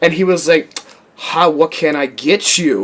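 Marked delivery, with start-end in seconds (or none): 1.2-2.9 mock sassy tone, lower. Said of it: "he's so sassy".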